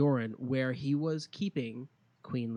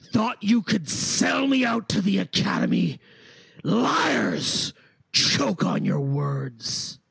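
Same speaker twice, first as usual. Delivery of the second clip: furious, very loud, swooping high, echoing voice; 7 semitones higher, 9 dB louder than usual. Voicing Oscar as his voice echoes through the room: angry Oscar voice. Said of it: "a voice echoes through the room".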